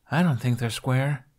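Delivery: grumbling, grumbled tone. Reading a story aloud, voicing her reply to him, grumbling. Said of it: "she grumbled".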